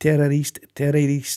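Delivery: ordinary delivery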